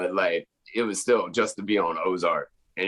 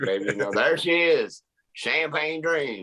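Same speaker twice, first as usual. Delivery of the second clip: switched-on Southern drawl, pitched up; 7 semitones higher than usual. Showing how easily the speaker can turn on their Southern accent, Southern drawl. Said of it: "I can turn it on just like this".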